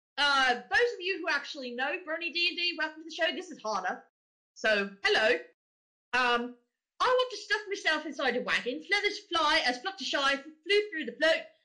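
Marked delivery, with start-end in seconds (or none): 5.1-11.5 fake, put-on London Cockney British accent. Reading a passage aloud like her, in a put-on Cockney accent. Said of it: "has a Cockney British accent. ... So I'm going to read this like her".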